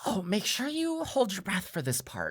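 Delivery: whispering small gnome voice. Voicing a small gnome employee warning the party in a lift: whispering as Eth. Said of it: "whisper up to you and say".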